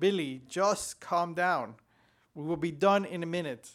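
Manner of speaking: normal talking voice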